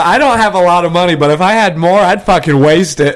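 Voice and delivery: normal talking voice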